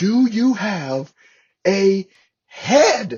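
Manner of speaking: shrill, very loud, very slow, drawn-out shout. Retelling asking a desk clerk for a head, retelling own yell. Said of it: "I kinda like yelling at her".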